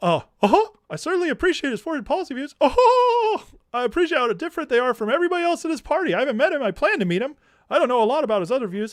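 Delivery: very high-pitched, arrogant, condescending tone. Mocking how Tucker talks about a politician, do the Tucker voice, an arrogant, condescending Mickey Mouse. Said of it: "Mickey Mouse with arrogance and condescension and just a slightly lower octave".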